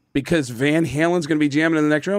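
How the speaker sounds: usual speaking voice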